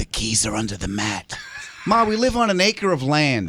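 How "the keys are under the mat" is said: mock whisper, lower and quieter. Retelling how a mother talks about hidden house keys: imitating someone whispering. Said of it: ""Why are you whispering?" We're no, you're like my mother".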